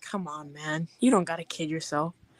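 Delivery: mock sorrowful, very sad, earnest tone. Retelling how a man told someone their height, imitating a sad tone. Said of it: "in a very sad tone of voice".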